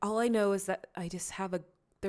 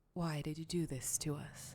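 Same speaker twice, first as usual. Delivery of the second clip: put-on voice of an older woman; 3 semitones lower, 7 dB quieter than usual. Voicing a possessed character speaking in another voice: voice of an older woman. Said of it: "her voice change to a voice that sounds familiar".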